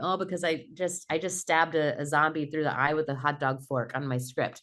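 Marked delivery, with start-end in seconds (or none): none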